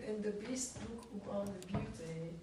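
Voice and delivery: normal talking voice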